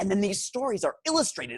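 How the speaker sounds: ordinary delivery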